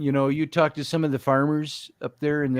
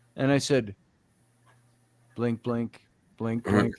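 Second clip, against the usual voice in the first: ordinary talk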